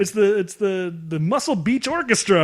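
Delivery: high-pitched, sarcastic mock cheer. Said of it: "they're like".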